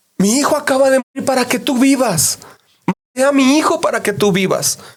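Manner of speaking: very high, wild, frantic crying-out shout. Retelling how a man shouted at people in every train car, retelling a frantic shout. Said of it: "en cada vagón les estaba gritando eso".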